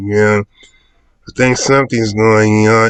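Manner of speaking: very slow, indistinct, low-energy, dragged-out mumble. Retelling how the sergeant talks in the movie: mumbling Rami Malek imitation. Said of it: "he's mumbling".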